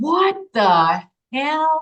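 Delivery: put-on high, in-your-face screamed outburst. Retelling jumping off the couch at their mother; retelling a scream. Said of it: "I scream in my mother's face".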